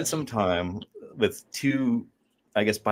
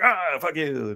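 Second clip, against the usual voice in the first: put-on grouchy old man grumble, cranky and pitched up; 6 semitones higher than usual. Retelling how her father came in from the cold, imitating a cranky old man. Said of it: "he came in and he was all cranky".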